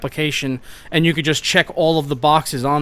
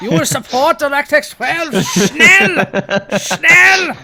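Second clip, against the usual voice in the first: put-on German voice, higher and louder; 12 semitones higher, 6 dB louder than usual. Doing the voice on request from the other speaker: Hitler voice. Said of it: "you wanna do the Hitler voice".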